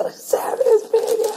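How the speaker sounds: re-enacted screaming. Reminding the listener of their happiest moment so far, retelling a scream. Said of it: "But I started screaming".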